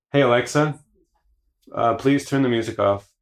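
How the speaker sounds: gentle, courteous tone. Repeating the request to the voice assistant more politely: nicer tone. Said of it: "a little more nice tone".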